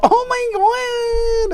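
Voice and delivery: very high, over-the-top fake gushing, drawn-out "my". Mocking how someone fakes interest, with mock gushing enthusiasm. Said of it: "Not with this fake enthusiasm, like".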